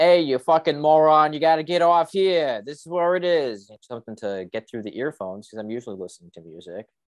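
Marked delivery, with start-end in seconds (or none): 0.0-3.7 put-on high yell in a thick Boston accent. Retelling a guy yelling in the speaker's ear, the speaker does a mock yell in a thick boston accent. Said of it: "yelling in my ear with a thick Bostonian accent".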